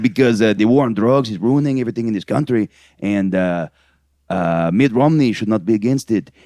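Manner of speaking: put-on Mexican accent. Quoting someone's brother from a documentary, in a put-on mexican accent. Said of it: "'Cause I'm gonna do the accent anyways".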